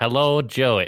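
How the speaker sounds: fake English-sounding voice. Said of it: "That's the same voice".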